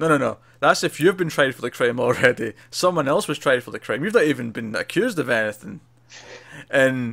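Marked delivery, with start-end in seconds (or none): none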